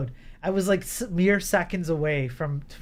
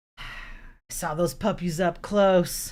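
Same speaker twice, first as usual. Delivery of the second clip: put-on thick, raspy smoker's voice. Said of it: "she's like".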